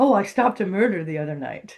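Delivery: ordinary delivery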